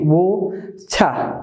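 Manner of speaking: British pronunciation. Showing learners how the British pronounce the T in a word: British accent. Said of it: "the T is pronounced as normal T".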